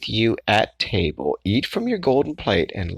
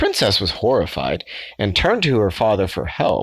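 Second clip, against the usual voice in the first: ordinary delivery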